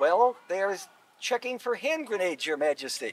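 usual speaking voice

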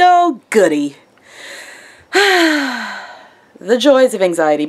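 heavily sarcastic, very slow drawl. Talking about living with anxiety, very sarcastic. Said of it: "Can you tell I get very sarcastic?".

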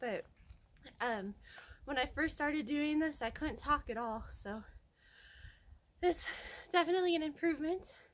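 out of breath, winded, phrases broken up. After cycling up a long driveway, speaking to viewers out of breath. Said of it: "I'm out of breath now".

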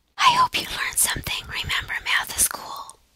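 quiet, friendly whisper. Signing off a math lesson video to viewers, whispering.

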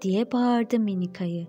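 ordinary delivery

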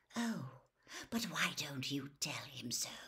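quiet, low, hushed whisper. A man answers a rival's threat, whispered. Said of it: "Whispered Snape".

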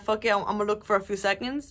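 usual speaking voice

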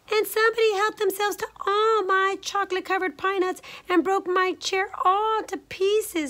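very high squeal, close to tears. Little Honey speaks after Mama Honey Bear, in Little Honey's tearful squeal. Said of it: "squealed Little Honey in his little voice as his little brown eyes welled up with tears".

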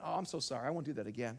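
offhand, careless, throwaway tone. Acting out someone who slaps the pastor, then apologizing: careless apology. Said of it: "imagine if someone says to me".

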